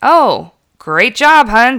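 loud, swooping, sneering sarcastic tone. Recalling how she praised his vacuuming back then: acted-out sarcastic praise. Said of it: "And my tone, even if I was saying, great job, hun, I was doing it like".

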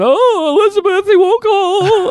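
mock, very high, slow, tearful sobbing voice. Retelling how a sister calls on the phone: imitating someone crying. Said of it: "she calls crying, going".

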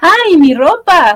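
put-on cry of pure excitement, loud. Retelling a character's line about her clothes: imitating an excited exclamation. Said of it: "lo dice así con una cara de emoción".

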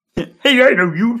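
excited, high cartoon frog voice. Reading a story aloud to a listener, voicing Kermit's line: Kermit the Frog voice. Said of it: "You're really committing you. to the voice".

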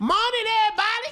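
very high, loud voice. Doing an impression of Junior after being asked to: imitating Junior. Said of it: "That's Junior".

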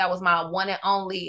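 ordinary talk

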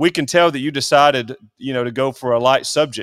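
ordinary talk

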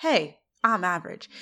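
ordinary delivery

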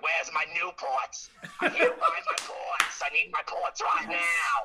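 put-on high, loud, swooping New Jersey accent. Retelling the joke voice his girlfriend does, Denise voice, New Jersey accent. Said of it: "she's from Jersey".

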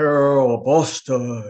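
loud booming voice carrying across a room. Retelling how a man called her name across the room; imitating a booming call. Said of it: "there was a booming voice that came across the room".

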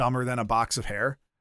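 ordinary talk

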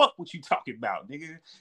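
put-on fed-up voice. Retelling a favourite scene: imitating Reggie fed up. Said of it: "my favorite part of that scene is Reggie being fed up".

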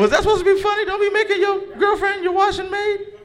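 voice jumping up to a high pitch. Asking an audience member if his remark was supposed to be funny: high-pitched voice. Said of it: "why your voice got so high when you asked that question".

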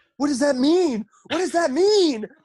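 high, loud, frantic scream.

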